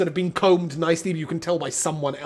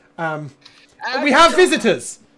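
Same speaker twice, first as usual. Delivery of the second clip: loud, raised voice, pitched up; 7 semitones higher, 8 dB louder than usual. A character addresses a lady as if she's hard of hearing, speaking quite loud. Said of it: "he sort of speaks quite loud".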